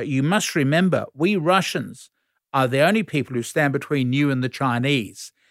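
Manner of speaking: usual speaking voice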